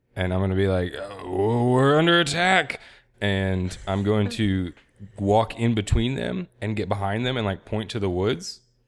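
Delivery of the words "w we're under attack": high, put-on drunken alarm, stumbling start. Keeping up a ruse in a fight scene: acting drunk. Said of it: "I'm gonna continue acting drunk".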